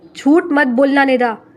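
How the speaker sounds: furious roaring. Reading a story, the brother catches his sister lying: roaring angrily. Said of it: "آذر دھاڑا".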